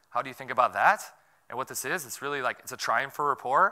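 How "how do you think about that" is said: Australian upspeak, pitch going up at end on "that". Describing how Australians go up at the end: rising pitch on that. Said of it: "they always go up at the end when they say everything, like this".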